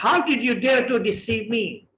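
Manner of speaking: furious, angry, accusing tone. Example question in an English lesson, asked in anger: angry. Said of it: "एक पूछा भी जा रहा है गुस्से से। ... आपका लहजा भी इसी तरह का हो।".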